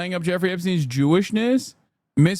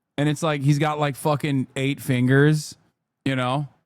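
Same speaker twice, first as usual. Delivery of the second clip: ordinary talk, nothing marked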